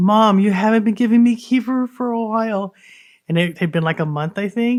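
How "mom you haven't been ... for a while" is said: put-on crying, tearful seven-year-old child voice. Retelling what a friend's seven-year-old son said: imitating a crying child. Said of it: "big old crocodile tears strolling down his face".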